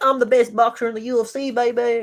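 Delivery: slow, high-pitched, drawn-out southern drawl. Discussing a UFC fighter's chances, quoting Max Holloway in a southern accent. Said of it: "You gave him like a southerner accent".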